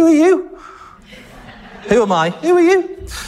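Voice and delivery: Scouse accent, pitched very high. Reading a passage aloud, the speaker can't help using a Scouse accent. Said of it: "I can't help but read this with a Scouse accent".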